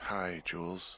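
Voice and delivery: drowsy, sleepy, tired, just-woken voice. Woken up and told to pick up the radio, [name] greets Jules; tired voice. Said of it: "you sound tired".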